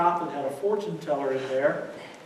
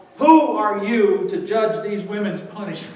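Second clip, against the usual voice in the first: usual speaking voice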